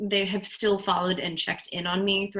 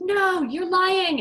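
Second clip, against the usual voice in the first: put-on screaming, much higher, louder; 12 semitones higher, 6 dB louder than usual. Speaker recalls people screaming at her during deprogramming, retelling a scream. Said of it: "They would just be screaming at me like".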